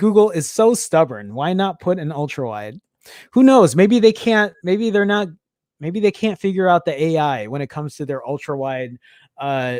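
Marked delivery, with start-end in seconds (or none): none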